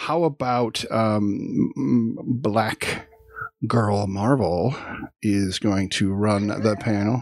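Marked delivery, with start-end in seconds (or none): 2.3-7.2 slow, halting, careful delivery, every word precise. Handing the panel over, the speaker says the name slowly to get it right. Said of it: "I had to say it slow".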